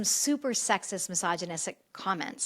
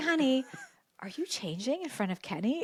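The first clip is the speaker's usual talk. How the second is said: put-on whisper, higher in pitch and quieter; 3 semitones higher, 5 dB quieter than usual. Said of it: "he tries to whisper on FaceTime".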